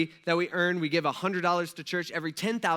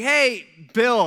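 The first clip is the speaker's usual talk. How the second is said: put-on loud yell, higher and louder; 5 semitones higher, 9 dB louder than usual. Retelling how a worker asked the register guy across the restaurant: imitating someone yelling loudly. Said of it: "he yells at the top of his lungs".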